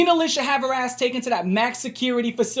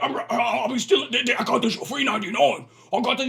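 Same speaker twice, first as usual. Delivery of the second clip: hoarse, rough voice. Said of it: "You sound like the Cookie Monster with fucking bronchitis".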